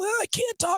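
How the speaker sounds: very high, sickly, sore-throat sound. Showing how a sore throat would sound on the radio: mock sore-throat voice. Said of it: "if I'm sounding like".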